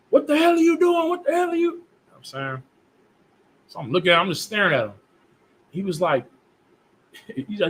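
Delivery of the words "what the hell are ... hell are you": put-on, very high-pitched, screaming. Telling a story about a man who cut him off, imitating him screaming. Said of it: "He's screaming".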